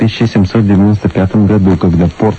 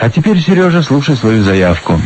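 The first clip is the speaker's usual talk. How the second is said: usual speaking voice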